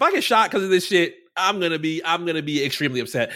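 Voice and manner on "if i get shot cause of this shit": usual speaking voice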